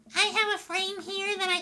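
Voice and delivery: very high-pitched put-on character voice. Reading a character's line aloud as an impression of Susie. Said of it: "That's my impression of Susie".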